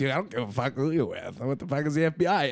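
groggy, dazed, out-of-it, half-stupor rant. Retelling a clash with an FBI agent, imitating Casper's half stupor. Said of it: "in his fucking Denmark half stupor".

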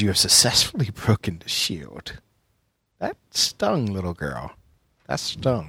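very soft, hushed, menacing snarl. Voicing Strahd at the death of his minions; Strahd snarling. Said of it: "He snarls at the death of his minions".

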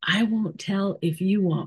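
whispered voice. Retelling a surprise meeting behind a backdrop: retelling a whisper. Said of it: "and I whispered".

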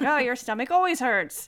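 ordinary delivery

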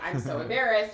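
ordinary talk

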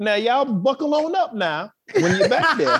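high put-on persona voice, announcer style. Imagining her piloting the plane, speaking to passengers in the Annie voice. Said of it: "doing it in the Annie voice".

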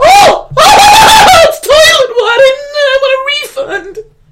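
play-acted very high, very loud, drawn-out blubbering wail. Retelling diners standing on chairs in a flooded dining room, imitating crying diners. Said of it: "people standing in chairs crying like".

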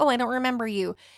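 mock feigned forgetfulness. Retelling how a photographer acted as if she did not remember: imitating someone feigning not remembering. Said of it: "playing, like".

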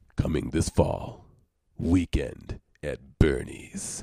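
deep, breathy movie trailer announcer voice. Mock announcement of 'Weekend at Bernie's', put-on deep voice. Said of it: "with my deep voice".

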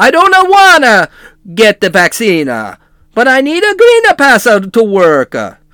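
slow, put-on Italian accent, extra -a on endings. Showing how Italian accents go, a podcast host says this in an Italian accent. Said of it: "With Italian accents, you always put an A at the end".

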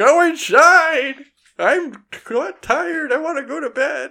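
put-on grouchy old man hollering, loud, shrill, slow, drawn out. Picturing going outside to scold the noisemakers: yelling like an old man. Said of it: "start yelling like an old man".

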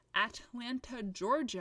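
plain

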